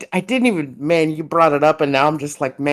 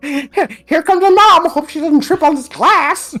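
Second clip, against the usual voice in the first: very high, squeaky, loud, goofy put-on character voice; 12 semitones higher, 5 dB louder than usual. Imitating how he voiced characters in his videos, in a high-pitched character voice. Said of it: "he has this high pitched voice".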